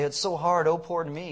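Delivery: ordinary talk, nothing marked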